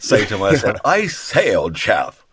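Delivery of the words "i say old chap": very slow, posh, upper-class drawl. Showing what they say when asked for one, posh upper-class voice. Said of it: "asked to do a really posh upper class voice".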